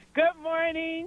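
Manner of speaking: happy tone. Greeting the host after getting through on the radio, sounding happy. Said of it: "You sound so happy today".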